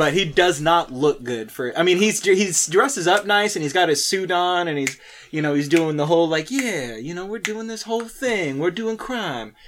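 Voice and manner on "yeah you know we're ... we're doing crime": smooth-talking, slick smooth-talker patter, pitched up. Imitating the same con man character being a smooth talker: imitating a smooth talker. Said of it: "he's a smooth talker kinda guy".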